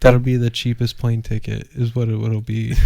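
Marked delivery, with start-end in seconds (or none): none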